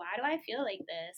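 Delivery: normal talking voice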